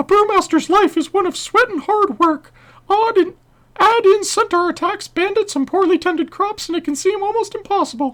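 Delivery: high, loud squeaking voice. Voicing a game character's dialogue at a viewer's request, Mickey Mouse voice. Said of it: "F P S Polska says Mickey Mouse voice for this guy, so here we go".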